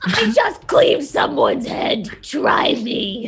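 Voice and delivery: speaking through clenched teeth. Answering a taunt in character: talking through her teeth. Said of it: "She's talking through her teeth".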